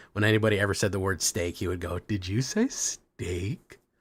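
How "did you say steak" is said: goofy, silly voice, very slowly stretched and drawn out. Retelling what a buddy always said about steak: imitating Russ's silly voice. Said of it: "a fucking silly-ass voice".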